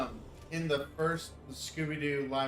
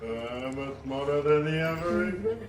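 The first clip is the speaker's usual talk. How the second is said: loud, put-on cartoon bear voice; 6 dB louder than usual. Trying out cartoon voices, attempting a Yogi Bear impression. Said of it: "naturally deep voice like Matt's in order to like properly do uh Yogi".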